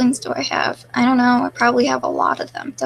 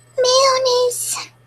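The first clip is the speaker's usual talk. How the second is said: very high, cracking, crackly put-on voice; 12 semitones higher than usual. Asked to say mayonnaise in a lolly voice: crackly lolly voice. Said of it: "Can you say mayonnaise in a lolly voice? Oh, it's kind of crackly".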